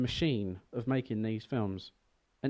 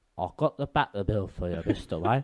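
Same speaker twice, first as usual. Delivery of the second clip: put-on nasal older man's voice, lower and louder; 3 semitones lower, 5 dB louder than usual. Showing how an older Michael Caine talks: Michael Caine voice. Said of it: "he started to talk a lot like this".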